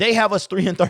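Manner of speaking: high, laugh-broken speech, cut off. Stating the team's three and thirteen record, laughing while talking. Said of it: "I can't even say it without laughing".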